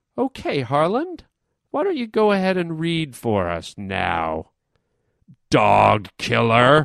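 scornful, contemptuous tone with swooping pitch. Retelling a woman's reply after the story made her cry: imitating an accusing tone. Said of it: "that was in her voice".

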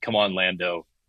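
ordinary delivery

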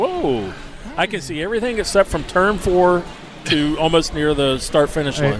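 normal talking voice

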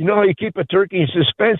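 put-on, conspiratorial, secretive, low hushed voice. Retelling leaning into someone to tell a Thanksgiving joke, mock-conspiratorial lowered voice. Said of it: "I lower my voice and I go, uh, conspiratorially".

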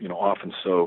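ordinary delivery

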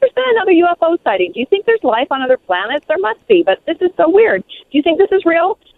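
quick, high-pitched eager chatter.

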